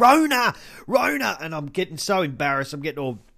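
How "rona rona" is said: very high, shrill, screeching scream. Retelling how a woman started shouting at them, imitating her screaming. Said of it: "she starts like screaming at me".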